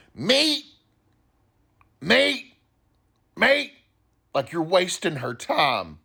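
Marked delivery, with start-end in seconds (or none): 0.2-3.7 put-on woman's voice, very high, rough, impatient shout. Recalling a lady past the salad area, imitating her impatient shouting. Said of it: "some lady would shout at you".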